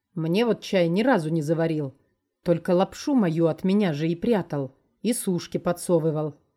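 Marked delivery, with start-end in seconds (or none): none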